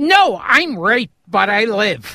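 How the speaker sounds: very perky, sunny, bright and unhurried slow delivery. Retelling what an actress on the show answered: imitating a perky actress. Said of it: "very perky".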